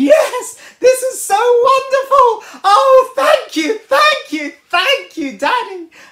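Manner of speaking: put-on delighted kid voice, very high and very loud. Telling a story about a child given horse manure: imitating an excited, jumping child. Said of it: "start jumping around and going".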